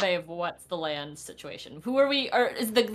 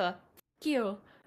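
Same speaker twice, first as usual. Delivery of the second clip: muttered, hushed half-whisper under the breath; 6 dB quieter than usual. In a tabletop game, voicing a character's words to the man she kills, half-whispering under breath. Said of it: "She whispers under her breath".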